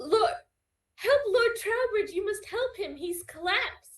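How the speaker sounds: very high, shrill, urgent shout. Narrating a scene as Horatia's betrothed collapses to the ground, Horatia's shout. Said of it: "Horatia is going to like shout".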